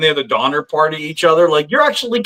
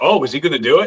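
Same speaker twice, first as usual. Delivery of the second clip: speaking in a dog's voice. Voicing what the dog seems to think: voicing his dog. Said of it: "she's just like".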